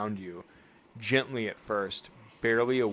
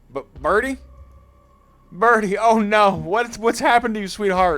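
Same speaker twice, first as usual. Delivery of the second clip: put-on very loud, high, belted country accent; 11 semitones higher, 12 dB louder than usual. Voicing Duke finding his hurt chicken Birdie: Duke country accent. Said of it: "I forgot the country accent".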